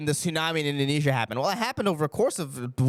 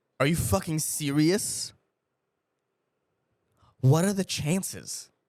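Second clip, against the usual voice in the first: put-on exasperated executive voice. Doing an impression of the CEO of Porsche in September 2001. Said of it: "that's my impression of the C E O of Porsche".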